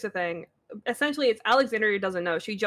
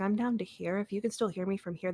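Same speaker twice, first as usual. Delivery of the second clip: soft voice, turned down below usual talk; 6 dB quieter than usual. Testing whether others can hear, speaking quieter than usual. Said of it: "this is lower than I talk".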